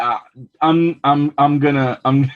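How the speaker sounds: hesitant, faltering stammer. Asked by a co-host who else, struggling to answer: stuttering. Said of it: "You are stuttering right now".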